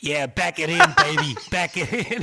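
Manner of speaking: put-on New York accent, loud, swooping. Retelling talking in one's sleep during a dream on a road trip, in a new york accent. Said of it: "I was talking in a New York accent".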